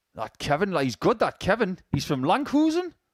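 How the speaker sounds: over-accentuated, exaggerated Geordie accent. Speaker hamming up his own accent during the darts commentary: exaggerated Geordie accent. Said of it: "Why are you doing an accent of your own accent?".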